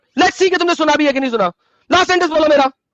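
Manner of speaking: loud, angry shouting.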